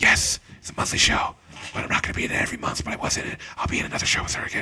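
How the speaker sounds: soft, hushed whisper under the breath. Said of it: "Why am I still whispering?".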